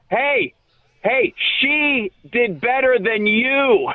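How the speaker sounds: heckling shout, calling out. Retelling how a Philly fan heckled the speaker at the free throws: retelling a heckler's shout. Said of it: "kind of like shouting this".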